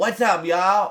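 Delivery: put-on loud charming Southern accent. Describing performers, imitating Joseph Gordon-Levitt's southern charm accent. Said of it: "like a southern charm charm accent".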